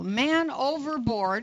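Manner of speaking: ordinary talk, nothing marked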